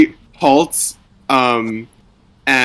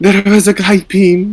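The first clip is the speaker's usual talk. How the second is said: put-on high-pitched, panicked voice in a Russian accent; 7 semitones higher than usual. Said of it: "How do I do a panic Russian accent?".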